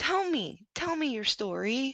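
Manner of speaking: very gentle, really soft, high voice. Retelling a call made three months ago: imitating own past soft voice. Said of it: "I did it in a really, really soft voice".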